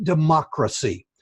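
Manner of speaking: democracy with stress on second syllable mo. Pointing out a pronunciation problem with democracy: stress on second syllable mo. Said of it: "with an emphasis on the second syllable".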